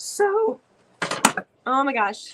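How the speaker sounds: very slow voice, cracking and giving out. Explaining work on gold pieces while sick, voice giving out. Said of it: "there goes the voice".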